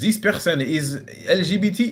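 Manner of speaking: put-on German accent, slow, high, words drawn out. Describing how the Stasi spread rumors to ruin people, German accent. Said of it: "Sorry about the German accent".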